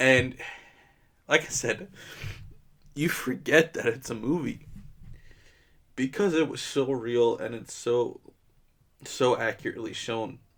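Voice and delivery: tearful voice, speaking through crying. Talking about a film that is very personal to the speaker, crying. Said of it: "I'm sorry that I'm crying".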